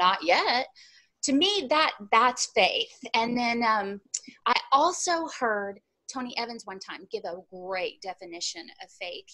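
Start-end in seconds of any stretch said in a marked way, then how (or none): 0.0-0.7 mock self-assured, bold, confident, unbothered. Retelling the husband's reply about catching fish: imitating a bold reply. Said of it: "he looks at me real boldly and goes".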